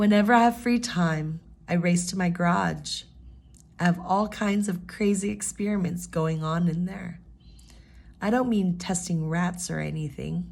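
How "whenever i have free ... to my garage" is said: brief pause at comma after free time. Showing that a comma gets a quick pause: quick pause after 'free time'. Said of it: "whenever there's a comma, you're going to give it a quick pause".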